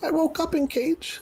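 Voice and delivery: squeaky scurrying creature voice, very high. Asked how he got into the cage, Nimble answers in a squeaky scurrying voice. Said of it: "in his scurrying, squeaky voice".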